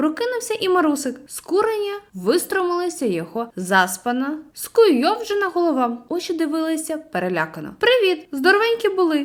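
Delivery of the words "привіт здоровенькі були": merry, high, cheerful called-out exclamation. Reading a story, Sashko Tsyhan greets Marusyk, who has just woken: cheerful exclamation. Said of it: "весело вигукнув Сашко Циган".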